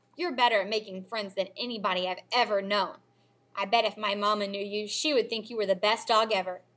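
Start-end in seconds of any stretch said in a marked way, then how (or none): none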